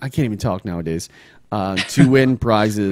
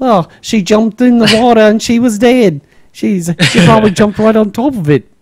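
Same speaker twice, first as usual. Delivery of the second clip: horrible fake Australian accent, very high, shrill, very loud; 11 semitones higher, 9 dB louder than usual. Quoting a woman from a Netflix crocodile video, horrible Australian accent. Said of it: "that's a horrible Australian accent".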